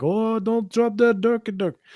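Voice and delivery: put-on Indian accent. Retelling what an older man said at a store: imitating an Indian accent. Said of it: "more like Indian".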